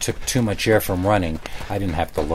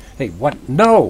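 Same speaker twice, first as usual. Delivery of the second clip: stammering, stuttering, louder and slower; 6 semitones higher, 7 dB louder than usual. Seeing a man running at him holding a shovel, stammering. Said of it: "I stammered".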